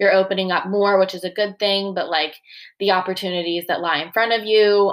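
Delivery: ordinary talk, nothing marked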